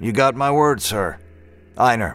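ordinary talk

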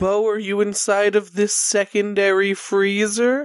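calling out loudly. In a tabletop game, calling to Bo inside a freezer, shouting into a freezer. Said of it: "are you just like shouting into it?".

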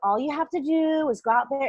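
put-on cool, calm, soft voice. Retelling how the coach talked them through a panic: imitating Nicole DeHart's calm soft voice. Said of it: "she just has this cool, calming, and soft voice".

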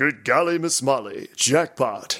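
announcing like a video game in-game narrator. Imitating the game announcer calling a jackpot: imitating the game announcer's voice. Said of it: "A voice like this, and it does the announcing".

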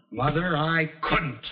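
high shout. A son answers his mother, who says he should have stopped them: shouting. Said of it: "Don't you shout at me".

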